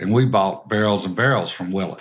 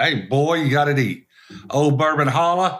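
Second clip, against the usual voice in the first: put-on yelling as if across a distance, higher; 6 semitones higher than usual. Retelling Booker Noe yelling across from a passing car: imitating Booker Noe yelling. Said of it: "Booker yelling across".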